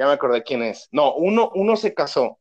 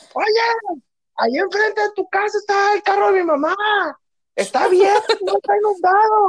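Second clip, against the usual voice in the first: mock very high, urgent yelling. Retelling what the other speaker shouted about a flooded street: imitating someone shouting. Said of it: "recuerdo que me gritaste".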